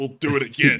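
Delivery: loud, ominous, menacing, threatening. Host repeats his own sign-off to his co-host: mock-threatening. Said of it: "Why in the world did that sound like a threat?".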